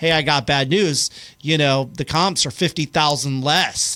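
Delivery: plain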